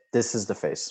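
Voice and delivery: ordinary delivery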